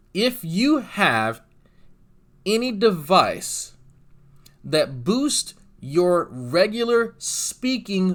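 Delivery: slow, emphatic, heavy emphasis on every word.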